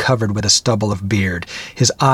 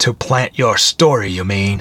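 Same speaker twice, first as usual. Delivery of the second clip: snarled, snarling. Reading fiction, a young man retorts to an old man who warned him, snarled. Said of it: "The young man snarled".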